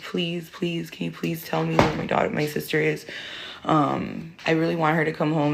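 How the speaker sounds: mock little girl voice, tearful, crying and begging. Retelling a young daughter's plea on the phone: imitating someone crying. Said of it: "just sitting there crying".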